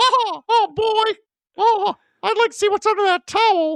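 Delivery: cartoon mouse voice, pitched very high. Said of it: "I sound like Mickey Mouse now".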